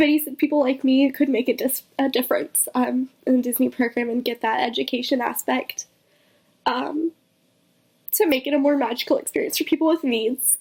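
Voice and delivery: voice catching on the edge of crying. Recalling what a kind man told them about the disney program: choking up. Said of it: "I'm really gonna cry".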